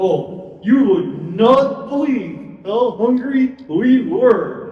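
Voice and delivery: voiced as a lion puppet. Telling the story through the puppet Mister Lion: Mister Lion puppet voice. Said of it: "the story through Mister Lion".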